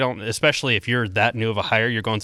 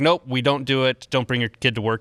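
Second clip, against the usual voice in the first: plain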